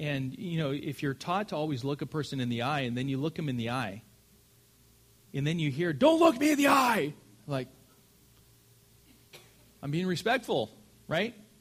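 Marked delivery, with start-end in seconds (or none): 5.9-7.1 shrill drill-sergeant scream, very high-pitched. Describing being yelled at up close, acting out the shout: imitating someone screaming. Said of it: "screaming at you".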